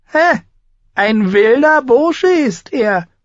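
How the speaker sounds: very high, loud, scornful mocking sneer. A narrator reads a small woman's remark about a young man on horseback, sneering. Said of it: "höhnte die kleine Frau".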